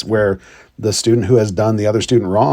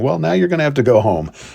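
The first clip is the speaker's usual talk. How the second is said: dry, sarcastic delivery; 4 semitones higher than usual. Retelling own past words to an upset student: imitating own sarcastic remark. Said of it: "sarcastically saying".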